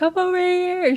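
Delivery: very high, shrill, loud called-out yell. Imitating mom calling across the home: imitating a shout. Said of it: "shouting and being like".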